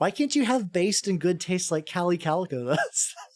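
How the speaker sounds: speaking while laughing, barely holding back laughter. Teasing a chat member by comparing them to another, laughing while talking. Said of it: "I couldn't even say that with a straight face without laughing".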